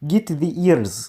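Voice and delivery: put-on, attempted Russian accent. Giving a guy character his voice, trying an attempted russian accent. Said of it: "I want to be Russian".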